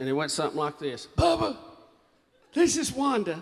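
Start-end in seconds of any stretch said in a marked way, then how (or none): 1.2-3.4 high, scratchy, phone-message-like voice. Retelling a phone message from Wanda: imitating Wanda's scratchy voice. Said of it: "Had that scratchy voice".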